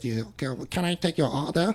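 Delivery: put-on Chinese accent. Acting out a restaurant worker taking an order: put-on Chinese accent. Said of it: "that's like your Chinese accent".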